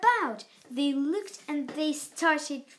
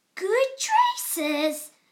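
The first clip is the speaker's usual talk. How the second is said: sudden, loud, high gasped-out cry; 7 semitones higher, 5 dB louder than usual. A character swoops into a show tent and sees another character, gasping. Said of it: "gasped Maisie".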